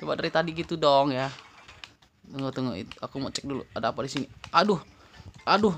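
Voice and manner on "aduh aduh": loud, frantic, alarmed and panicked. Playing a game and struggling to get a box, panicking. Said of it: "panik, coy".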